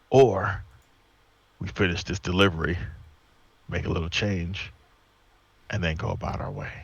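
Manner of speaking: whispering in a character voice. Whispering a plan to the barbarian in a dark cart: whispering in character. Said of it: "and I whisper to him".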